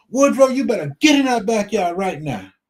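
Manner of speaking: play-acted full yell, high-pitched. Telling how his wife came outside and called someone in, imitating someone yelling. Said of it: "she started yelling".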